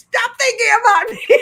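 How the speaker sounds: very high, shrill, loud, crazed screaming. Retelling screaming into the ether in the apartment: imitating own past screaming. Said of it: "I started screaming".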